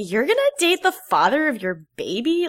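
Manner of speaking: put-on mocking voice. Retelling what Lauren said to another person, imitating a mocking voice. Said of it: "Lauren is the one who says in kind of, like, a voice".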